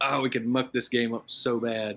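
usual speaking voice

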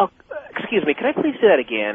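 mock courteous, well-mannered, sing-song polite tone. Retelling a live interview flub: imitating someone being totally polite. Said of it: "Or just totally polite".

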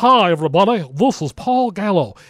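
carnival-barker announcer voice, hard-selling delivery. Criticising a man's unnatural on-air voice, you imitate his greeting, Paul Gallo carnival barker voice. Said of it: "this whole Carnival Barker".

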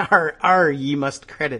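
joking put-on pirate speech. Joking about Talk Like a Pirate Day: joking pirate talk. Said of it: "And it was Talk Like a Pirate Day".

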